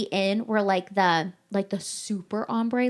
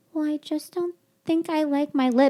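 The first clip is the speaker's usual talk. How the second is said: meek, mousy, high timid little voice; 6 semitones higher than usual. Recounting what a woman said on walking over, imitating her mousy quiet voice. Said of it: "all fucking mousy and quiet like".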